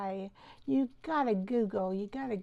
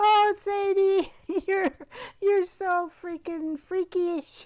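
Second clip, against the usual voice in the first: loud, high-pitched speech through put-on forced laughter; 8 semitones higher, 8 dB louder than usual. Laughing on a count of three while talking to Sadie: forced laughter while talking. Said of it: "count of three, we're gonna laugh".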